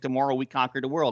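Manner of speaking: plain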